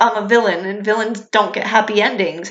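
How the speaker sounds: normal talking voice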